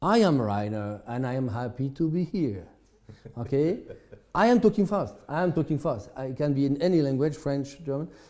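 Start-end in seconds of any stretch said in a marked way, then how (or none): 0.0-2.7 even, steady, unrushed, slow and quiet delivery. Describing how Rainer speaks English, the speaker imitates Rainer's quiet, unhurried talk. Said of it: "He's talking quietly. He's not talking, talking fast. He's always having a pace like".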